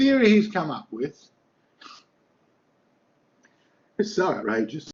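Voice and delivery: loud, swooping, speaking through laughter. Describing a man's theory to listeners, laughing while talking. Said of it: "Sorry, I'm laughing".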